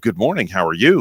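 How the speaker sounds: radio announcer voice, broadcast-style delivery. Calling someone to wish him good morning, greeting him in a radio voice. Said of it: "I see you got your radio voice on".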